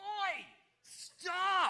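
high, loud yell projected far.

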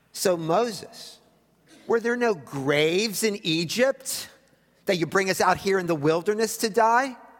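biting sarcastic tone. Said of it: "They got sarcastic".

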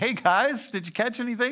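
acted laughing call. Retelling how Jesus greeted the fishermen from the shore: imitating Jesus laughing while talking. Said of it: "probably just kinda laughing and saying".

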